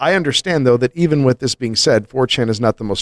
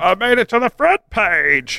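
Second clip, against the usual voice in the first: mocking parody voice, pitched higher; 8 semitones higher than usual. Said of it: "you see it on Imgur where it's like".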